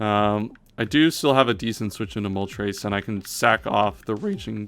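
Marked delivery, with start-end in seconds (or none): 2.8-4.7 voice cracks, slower pace. Talking through a game plan aloud, the voice cracks. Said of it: "that was a nice voice crack".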